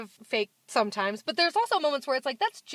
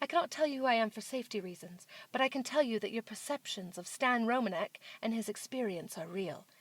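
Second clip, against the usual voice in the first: soft, posh put-on British accent, lady voice; 3 semitones lower, 8 dB quieter than usual. Retelling what a woman said in a message, in a fancy British lady voice. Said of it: "fancy British lady voice".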